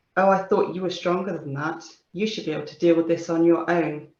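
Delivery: ordinary talk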